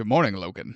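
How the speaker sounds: serene, unbothered, calm and composed politeness. Imitating Xavier greeting Logan: Patrick Stewart as Xavier impression. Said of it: "Especially Patrick Stewart, Xavier".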